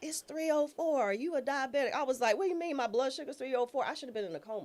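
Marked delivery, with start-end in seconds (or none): 0.0-1.9 sudden, sharp, put-on yell. Retelling a paramedic's yell after a finger prick: imitating someone yelling. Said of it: "he yells out".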